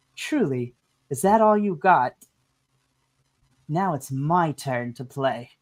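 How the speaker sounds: distorted-sounding voice. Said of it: "the distorted voice from the conductor".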